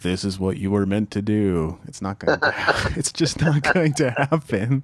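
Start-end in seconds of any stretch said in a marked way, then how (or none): 0.0-1.8 put-on booming divine voice. An author talking about his book mimics God announcing from the clouds, booming voice of God. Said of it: "announce in a booming voice".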